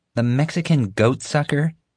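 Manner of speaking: high, scornful, disdainful, unimpressed tone. Narrating a schoolboy questioning a classmate's story, disdainful. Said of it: "Xavier asked disdainfully".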